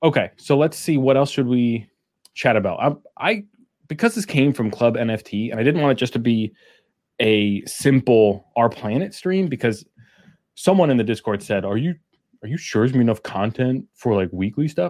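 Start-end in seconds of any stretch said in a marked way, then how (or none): 11.6-14.9 goofy, dopey, dumb put-on mocking voice. A streamer quotes someone from the Discord: dumb voice quoting Lou. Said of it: "I have a dumb voice on".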